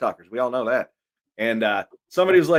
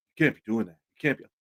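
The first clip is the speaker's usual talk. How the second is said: genuinely annoyed, upset, complaining voice; 3 semitones lower, 4 dB quieter than usual. Retelling how an upset person complained backstage: imitating someone's voice. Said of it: "just the voice you said it in".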